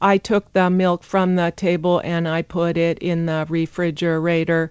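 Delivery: robot-like flat monotone, every word even. Explaining english intonation, speaker shows how nobody talks, sounding like a robot. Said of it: "You sound like a robot".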